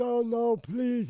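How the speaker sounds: mock crying, high and tearful pleading tone. Retelling how he begged while crying: imitating someone crying and pleading. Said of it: "He's crying and all this shit".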